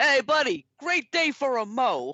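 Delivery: play-acted, overdone friendly yell, high, drawn-out, swooping. Retelling a movie character mowing the lawn: imitating a yell across the lawn. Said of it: "yells across and goes".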